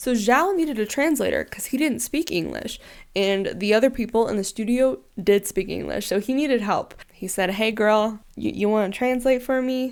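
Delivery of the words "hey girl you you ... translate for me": put-on rural country-style accent. Retelling a request for someone to translate, in a put-on country accent. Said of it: "I don't know why I did that in a country accent".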